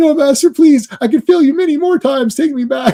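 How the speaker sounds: very high, pleading, begging little demon voice. Retelling a comedy scene in which a demon begs his master: imitating a begging demon puppet. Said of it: "He's like".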